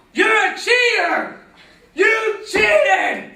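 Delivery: high-pitched, loud, furious screaming.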